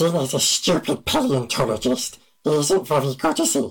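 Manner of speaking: imitated hissing creature voice. Speaker does an impression the hosts asked for, Gollum voice.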